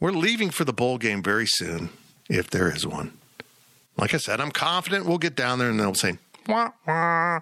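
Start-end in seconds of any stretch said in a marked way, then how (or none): 6.5-7.4 high, muffled, trombone-like wah-wah honk. Imagining what they'll say on arrival, Charlie Brown teacher voice. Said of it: "like in Charlie Brown teacher voice".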